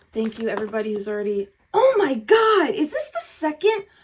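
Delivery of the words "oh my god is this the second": amazed, excited, very high, drawn-out yell. A tarot reader sees the same card come up again and yells. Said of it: "Sorry for yelling".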